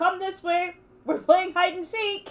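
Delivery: calling out loudly, shouting. A player's character calls out to the others in the game, yelling. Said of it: "I'll just yell".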